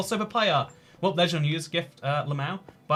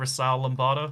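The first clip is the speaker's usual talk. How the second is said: ordinary talk, nothing marked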